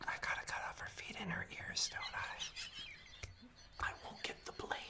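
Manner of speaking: very quiet, hushed, breathy stage whisper. Plotting in character while others in the space can hear: stage whisper. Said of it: "I'm not stage whispering enough".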